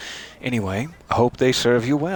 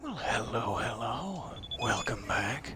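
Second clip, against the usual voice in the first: half-whispered, hushed, barely audible; 12 dB quieter than usual. Welcoming listeners back at nighttime in the underpass; half-whispering. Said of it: "I'm whispering, you see".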